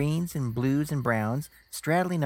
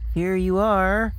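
raised, feigned offhand nonchalance, nervous underneath; 5 semitones higher, 6 dB louder than usual. Narrator, nervous under a masked stranger's gaze, speaking falsely matter of fact. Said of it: "falsely matter of fact".

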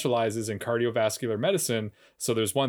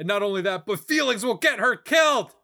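put-on loud, emphatic, shouty delivery, higher and louder; 11 semitones higher, 5 dB louder than usual. Retelling what Bryce says about Sarah: loud emphatic put-on voice. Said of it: "are you doing an impression of Matt Bomer?".

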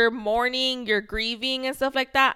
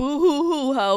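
mock crocodile-tear blubbering, fake boo-hoo sobbing; 3 semitones higher than usual. Describing reacting to someone's crocodile tears, mock crying. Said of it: "Then I'm just like".

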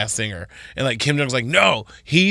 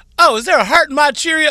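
loud, very high-pitched exclamation; 13 semitones higher, 5 dB louder than usual. Quoting what a cereal commercial always says: Leslie Jones voice. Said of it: "It's Leslie Jones from S N L".

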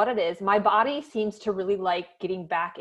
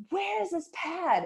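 very high, out-of-control screaming; 10 semitones higher, 4 dB quieter than usual. A mother retells screaming at her husband after her son woke, retelling a scream. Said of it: "I was literally like screaming at my husband".

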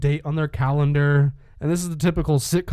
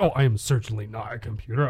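put-on android voice, lower; 4 semitones lower, 4 dB quieter than usual. Retelling a scene where Vision denies being a computer: imitating Vision. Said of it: "He's like".

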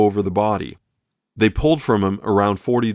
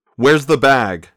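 hard, pressing, loud, insistent tone; 4 semitones higher, 5 dB louder than usual. Reading a story, the gunsel demands an answer from Jimmy, still clutching his jacket. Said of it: "demanded the gunsel".

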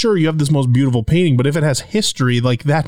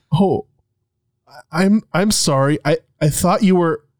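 acted-out voice trailing off; 3 semitones higher than usual. Recounting an apology to a stranger, acting out voice trailing off. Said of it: "voice trails off as I realize".

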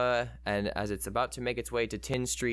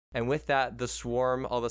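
usual speaking voice

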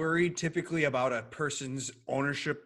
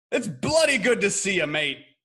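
very loud, pitched-up put-on British accent; 6 semitones higher, 9 dB louder than usual. Greeting a guest introduced as from England: put-on English accent. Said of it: "that's a good accent".

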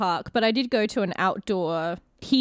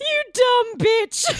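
very high gasp through laughter; 4 dB louder than usual. Telling how a cast member started laughing, retelling a gasp through laughter. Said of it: "he started laughing and he gasped out".

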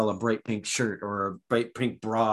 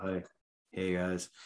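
flat, dull, droning monotone with no inflection; 4 semitones lower, 9 dB quieter than usual. Acting out someone twiddling their thumbs for hours: flat monotone. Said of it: "that monotone".

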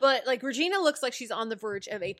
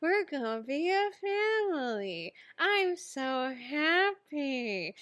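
put-on forced, unconvincing cheerfulness, higher pitch; 5 semitones higher than usual. Acting out a scene where Regina badly fakes happiness: imitating Regina's forced, unconvincing happiness. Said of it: "a death mask over her face, or she's like".

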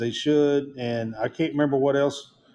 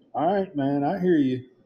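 really bad, fake put-on Southern accent. Answering a college football remark in a really bad Southern accent. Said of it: "I hear your really bad Southern accent".

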